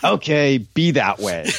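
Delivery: annoyed, irritated tone. Retelling Coach's reply after Sam refuses: imitating annoyed Coach. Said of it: "he's kind of annoyed".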